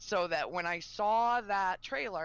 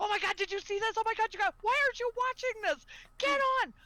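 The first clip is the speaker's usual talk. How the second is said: very high, excited, geeked-out shouting; 4 dB louder than usual. Recalling urging him to watch the panel, retelling a yell at a friend. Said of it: "I'm like yelling at him".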